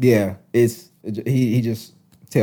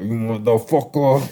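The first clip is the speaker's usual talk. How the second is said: thick, exaggerated put-on New York Italian accent; 2 semitones higher than usual. Recalling how a funny guy would joke, imitating Tommy's New York accent. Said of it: "overly New York, like Italian sounding".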